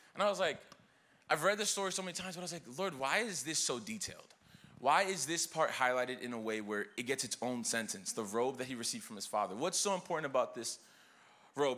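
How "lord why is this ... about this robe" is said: ordinary talk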